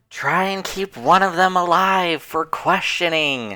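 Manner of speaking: high-pitched yelling out. Calling out to the party during a fight: yelling out in character. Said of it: "I'll yell out".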